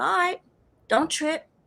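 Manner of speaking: acted sinister, malicious tone under a calm surface. Retelling own past words of reassurance: retelling own malicious tone. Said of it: "I said it in a very malicious way".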